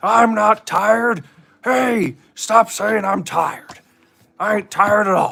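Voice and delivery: shrill, very high, pushed-up cartoon voice. On a stream, told to stop sounding sleepy, insisting otherwise: Mister Satan voice. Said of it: "Why'd you turn into Mister Satan?".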